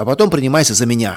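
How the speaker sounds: plain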